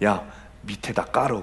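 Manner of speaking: quiet, low whisper. Retelling the punchline where a monk whispers to the waiter: whispering into an ear. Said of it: "귀에다 대고 귓속말로".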